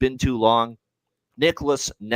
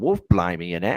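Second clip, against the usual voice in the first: hammy, slight put-on English accent; 4 semitones lower than usual. Joking about fish and chips in England, put-on English accent. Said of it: "my, uh, little English, uh, accent there".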